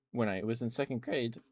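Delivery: voice breaking and cracking mid-phrase. Telling a story about second grade, voice cracking. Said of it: "voice crack".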